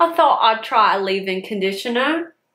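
clumsy, badly done put-on rural British accent. Talking about trying a leave-in conditioner, the speaker slips into a bad country British accent. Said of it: "That's like country British".

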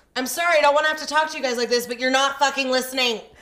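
loud, fast-rattled yelling.

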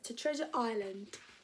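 ordinary delivery

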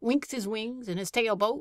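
ordinary delivery

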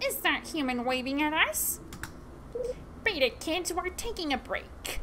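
put-on talking bird voice, a crow. Playing a game and voicing the crows' lines, in a crow voice. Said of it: "I didn't do a proper crow voice".

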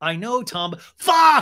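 high, loud pleading cry, yelled. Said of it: "So he's pleading".

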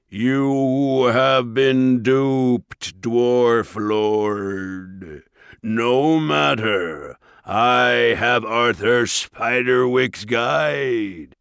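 sneering ogre voice, slow, echoing, words stretched. Reading a story, Mulgarath addresses the dwarf lord, in a ringing Mulgarath voice. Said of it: "The ogre's great horned head loomed over the rest of the creatures as he turned back to the dwarves with a sneer. ... [name]'s ringing tones echoed through the quarry".

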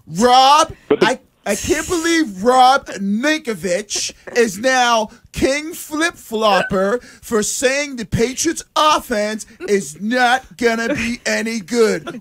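high, very slow, deliberate, drawn-out voice. Retelling what Greg said about Rob, in a Greg Hill voice. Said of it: "in the best Greg Hill voice possible".

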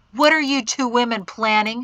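insistent, demanding tone. Narrator reads a man's question to Mari and another woman, demanding. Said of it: "he demanded".

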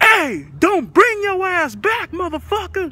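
shrill, very high, loud screaming holler. Retelling yelling at men across a lot, reenacting own scream across a lot. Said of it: "I scream out across the lot".

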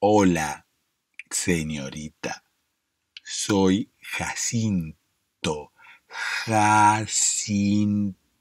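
very slow, over-enunciated, every syllable spelled out. Imitating Jacinto greeting a young woman, Jacinto's slow, deliberate speech. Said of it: "a hablar así".

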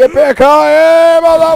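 very high, loud, shrill triumphant yell. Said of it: "you don't take full damage and go".

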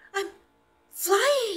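very high, very loud, thrilled, excited shout. Narrator voicing Flip-Flop as the balloon lifts him, excited. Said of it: "said Flip-Flop excitedly".

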